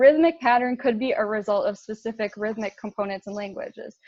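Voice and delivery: ordinary talk, nothing marked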